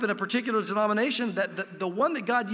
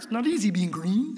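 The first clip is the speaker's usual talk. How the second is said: badly done put-on cartoon frog puppet voice. Speaker briefly quoting a famous frog mid-talk, in a terrible Kermit impression. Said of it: "That was a terrible Kermit".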